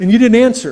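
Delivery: ordinary talk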